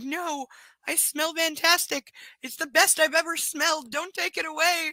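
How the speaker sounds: high-pitched, drawn-out dog voice. Retelling the dog running from a bath, speaking as the dog. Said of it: "he's like".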